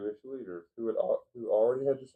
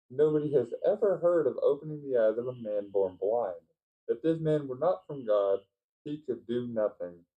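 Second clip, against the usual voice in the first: usual speaking voice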